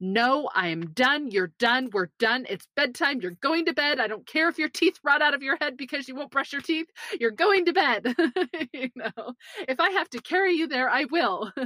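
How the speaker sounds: put-on stern, serious tone. Retelling what the speaker now says at bedtime, acting out a raised serious voice. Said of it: "it's a raised voice where I'm serious".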